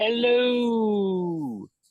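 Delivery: very high, exaggerated, sitcom-style drawn-out hello. Introducing himself to the group, greeting in a Seinfeld voice. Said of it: "in my favorite Seinfeld voice".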